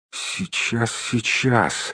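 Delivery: hushed, whispered mumble under the breath. Reading aloud, Bilbo thinks over the riddle: muttering. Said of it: "пробормотал Бильбо".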